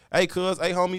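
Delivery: exaggerated slangy delivery. Mimicking how the locals greet each other: imitating exaggerated local slang talk. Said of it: "it sounds so exaggerated to me".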